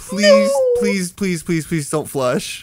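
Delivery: high, pleading, repeated hard begging. Retelling a stranger's plea not to flush: imitating someone begging. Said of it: "He's just begging to me".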